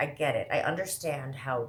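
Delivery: ordinary delivery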